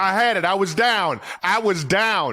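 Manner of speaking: high-pitched, pleading, insistent tone. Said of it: "some guys would be like".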